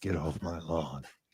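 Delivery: put-on hushed, grumpy, cranky old man voice. Doing an impression after mentioning Right Turn, Clyde: Clint Eastwood impression. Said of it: "That's my Clint Eastwood impression".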